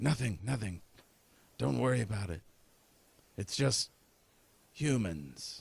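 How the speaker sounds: hushed whisper. Voicing a demonic figure answering a call from the Hellmouth, in a whisper. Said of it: "And he whispers back".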